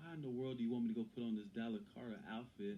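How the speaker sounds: ordinary delivery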